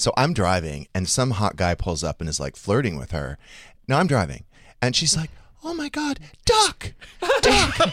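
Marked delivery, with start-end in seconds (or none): 5.6-7.9 really high voice, very slow and drawn out. Retelling what she said while you drove, imitating a really high voice. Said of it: "talks like this with a really high voice".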